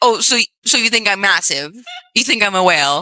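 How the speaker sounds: ordinary talk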